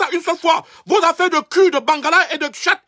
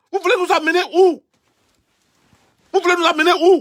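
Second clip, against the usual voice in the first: angry tone. Speaking out about the resistance and the country: angry. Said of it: "je suis en colère".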